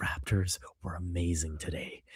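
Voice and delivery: mock ASMR whisper. Imitating the other speaker's quiet takes while a baby sleeps: imitating an asmr whisper. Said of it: "in A S M R mode".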